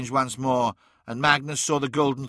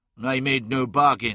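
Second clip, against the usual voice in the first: ordinary delivery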